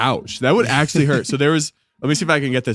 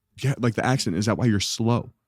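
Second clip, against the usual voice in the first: put-on deadpan delivery, lower and quieter; 3 semitones lower, 5 dB quieter than usual. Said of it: "two students dead serious came up".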